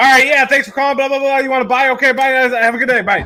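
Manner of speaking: mock fast-talking, high, rattled-off yelling. Describing a man across the office on the phone, imitating someone screaming fast. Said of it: "he'd be screaming. I hear every word, but he'd be going so fast".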